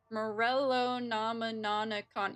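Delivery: very slow, careful, syllable-by-syllable pronunciation. Struggling to pronounce an item's name, saying it very slowly. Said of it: "I have to say it so slow".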